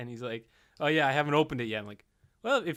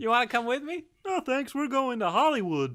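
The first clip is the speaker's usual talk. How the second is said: very high-pitched puppet-show frog voice; 11 semitones higher than usual. Answering someone who is off to New York for a television job, an attempted Kermit impression. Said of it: "that was my attempt at Kermit".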